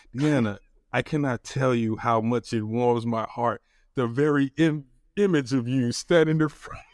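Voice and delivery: ordinary talk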